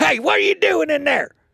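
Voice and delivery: pretend yelling. Jokingly retelling a camper encounter at night: pretend yelling. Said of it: "So then I go and I yell".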